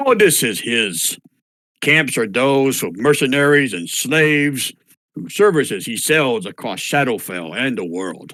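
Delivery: dim, dull-witted, dumbed-down ogre voice. Game master speaking as an ogre character to the players: dumbed-down ogre voice. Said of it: "I dummied that down with my ogre voice".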